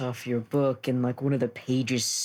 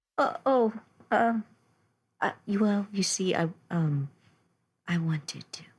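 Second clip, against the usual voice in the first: high-pitched, halting, stammering little bird character voice; 8 semitones higher than usual. Voicing a small bird answering thanks for the tea: voicing Eldoris the bird.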